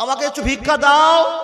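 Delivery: loud, high-pitched begging tone.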